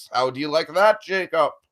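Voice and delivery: put-on loud nineteen-thirties old-time radio announcer voice. Podcast host addresses his co-host, 1930s radio announcer voice. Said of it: "I'm going to do the whole podcast like this, in this voice".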